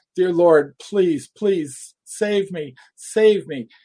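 loud, drawn-out, desperate begging cry. Retelling crying out to God as rounds exploded around: reenacting a desperate scream for help. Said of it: "I was screaming and screaming".

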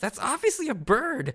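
very high-pitched, shrill yell. Recapping an anime scene, the speaker retells Aisa's yell. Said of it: "Aisa just yells".

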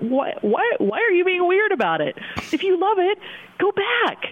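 mock exasperated "why", high and wide-ranging in pitch.

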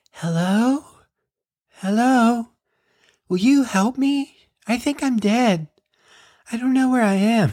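put-on very high, spooky, creepy ghost girl voice. Retelling a prank with a hidden speaker in a bedroom, creepy girl ghost voice. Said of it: "it was like a creepy girl ghost".

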